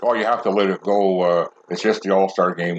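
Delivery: normal talking voice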